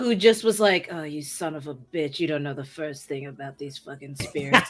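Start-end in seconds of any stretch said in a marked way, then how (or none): 0.9-4.7 put-on low, gruff, grizzled veteran voice. Showing a planned character, a seasoned Ghostbuster: put-on grizzled seasoned Ghostbuster voice. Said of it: "what your voice just then".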